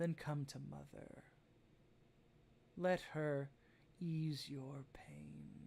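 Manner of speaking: eerie, creepy, overly motherly voice. Storyteller voicing a female figure in the Feywoods, creepily maternal. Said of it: "very creepily maternally".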